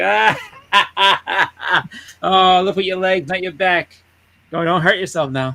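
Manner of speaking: slow, laughing, jeering tone. Retelling taunting a dealer loading boxes: retelling laughing while taunting. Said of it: "I pointed and laughed".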